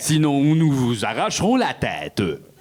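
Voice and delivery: put-on robot voice with Quebec accent. Joking that robots might talk in a Quebec accent, as the robot: ChatGPT robot voice. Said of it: "ils pourraient tous parler comme euh, ChatGPT".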